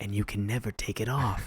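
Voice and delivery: creepy, menacing low voice. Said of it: "leans in creepily and is like".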